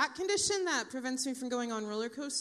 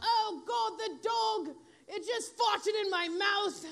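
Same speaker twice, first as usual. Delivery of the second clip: put-on drawn-out, slow yell in an English accent; 8 semitones higher than usual. Retelling husband's panic over the dog: imitating husband's British yell. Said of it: "he'll yell".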